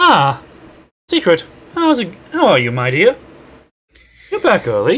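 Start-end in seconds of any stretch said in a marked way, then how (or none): 1.1-5.0 gentler, nicer character voice with the harsh edge dropped. Voicing the character Diana greeting Secret back early: nicer, less harsh Himiko-like voice. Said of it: "almost like Himiko, except, um, honestly nicer, less harsh".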